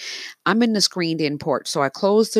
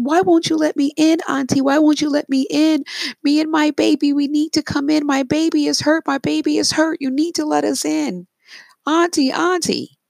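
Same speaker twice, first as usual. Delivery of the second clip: mock very high crying, begging, sobbing; 12 semitones higher, 4 dB louder than usual. Telling of a polar bear begging at the door, imitating crying pleas. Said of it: "continuously screams auntie and then starts to cry".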